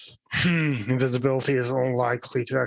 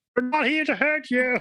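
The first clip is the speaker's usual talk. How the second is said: shrill, high yelling, reassuring tone; 12 semitones higher than usual. Answering a voice screaming for help from upstairs: yelling back. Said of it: "Kalicia's gonna yell back".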